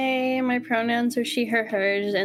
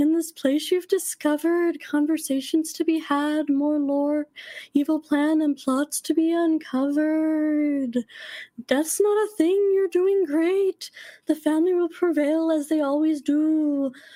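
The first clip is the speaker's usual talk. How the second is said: spooky ghost voice, pitched higher; 5 semitones higher than usual. Reading a fan poem aloud as a ghost character: ghost voice. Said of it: "insert ghost voice".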